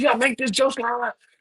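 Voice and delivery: put-on high-pitched scream. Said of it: "at midfield screaming at me".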